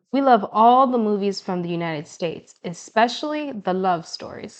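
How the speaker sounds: ordinary delivery, nothing marked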